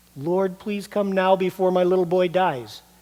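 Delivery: desperate, urgent, begging voice. Retelling an official's words about his dying boy, retelling a desperate plea. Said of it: "he just pleaded".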